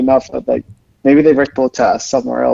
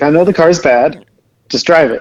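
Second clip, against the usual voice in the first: plain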